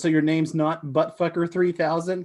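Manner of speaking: ordinary delivery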